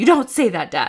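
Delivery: put-on loud child's yell, distant, as from another room. Retelling a child correcting Dad from another room: imitating a child yelling. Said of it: "he is yelling it".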